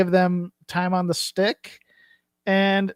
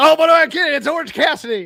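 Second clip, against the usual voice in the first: high, loud, fired-up outburst. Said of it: "getting so fired up, he goes".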